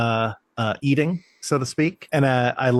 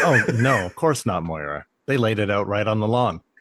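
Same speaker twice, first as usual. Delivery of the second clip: put-on deadpan delivery; 3 semitones lower than usual. Retelling Johnny's reply at the estate sale: imitating Johnny's deadpan delivery. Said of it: "his delivery of".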